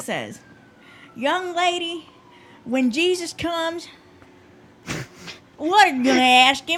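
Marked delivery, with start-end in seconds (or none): 1.1-6.8 put-on Texan accent, male voice. Retelling what a man at bible study said, imitating a man's texan accent. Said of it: "I'll try to say it just like he said it".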